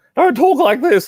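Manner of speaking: put-on very high, loud, squeaky prepubescent teenager voice. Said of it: "you're a prepubescent teenager".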